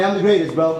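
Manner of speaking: ordinary delivery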